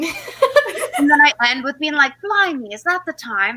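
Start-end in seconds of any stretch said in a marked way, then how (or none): 2.2-3.6 really awful, badly done fake British accent. Admitting they are bad at British accents, the speaker retells a line in a really awful British accent. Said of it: "like a really awful British accent".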